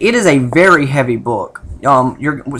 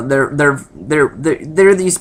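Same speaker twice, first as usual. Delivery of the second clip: repeating "they're" in a stutter. Reviewing a book late at night, listing its problems: stuttering. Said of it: "I'm stuttering, sorry, it's late".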